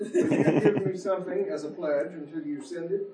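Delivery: loud, laughing read-aloud delivery.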